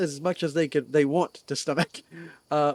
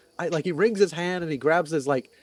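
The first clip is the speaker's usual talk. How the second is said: usual speaking voice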